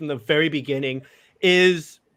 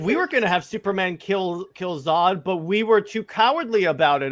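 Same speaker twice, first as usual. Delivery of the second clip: plain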